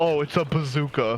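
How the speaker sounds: mock joking, not-serious tone. Recounting how their dad said it, retelling a joking tone. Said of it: "in a tone of voice that meant not really".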